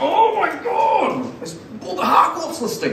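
high, drawn-out, exasperated wail of frustration.

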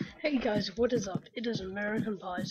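put-on crazy British accent. Greeting viewers at the start of the video: sounding like a crazy British guy. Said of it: "I sounded like a British crazy guy".

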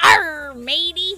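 talking like a pirate. Joking mid-game that it's Talk Like a Pirate Day: pirate voice. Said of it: "Talk like a pirate day".

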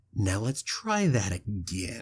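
put-on dead-calm, menacing voice with hateful undertone. Retelling a duel scene, quoting her answer to Anakin with mock deadly calm hatred. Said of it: "with this deadly calm and an undertone of hatred".

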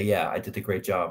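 ordinary talk

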